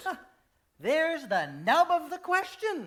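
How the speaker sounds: weighty, pompous, heavy-handed, self-important delivery. In a play, one man answers another about a painting, pompous, heavy-handed tone. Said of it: "he responds in this pompous, heavy-handed tone".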